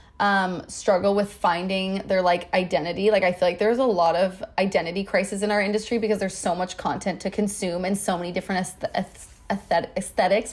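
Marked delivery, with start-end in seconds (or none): 8.7-10.5 stuttering with stammered restarts on the word aesthetics. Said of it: "stuttering so much in this episode".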